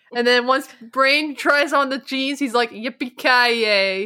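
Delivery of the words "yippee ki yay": mock flat deadpan, utterly expressionless, zero enthusiasm. Describing a cartoon scene, retelling Brain trying on the jeans, mock-deadpan. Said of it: "in the most deadpan manner possible".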